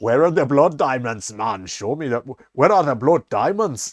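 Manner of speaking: forced, pushed, bad Jamaican accent. Retelling a bad fake accent from a film: imitating Leonardo DiCaprio's bad accent. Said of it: "instead he sounds Jamaican".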